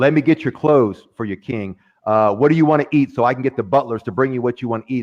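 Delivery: ordinary talk, nothing marked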